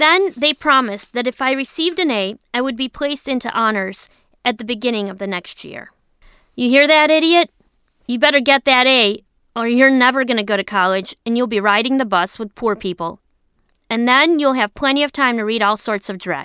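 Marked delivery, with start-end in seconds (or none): none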